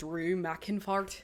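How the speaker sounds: speaking in Scottish accent. Asked to say the name with a Scottish accent, speaking in Scottish accent. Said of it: "say it with a Scottish".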